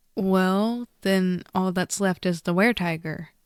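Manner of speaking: usual speaking voice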